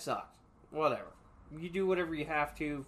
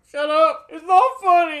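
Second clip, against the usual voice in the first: play-acted very loud, very high tearful yell, drawn out; 12 semitones higher, 17 dB louder than usual. Retelling snapping at friends after waxing nose: imitating own past crying shout. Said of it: "And I'm, like, crying and shit".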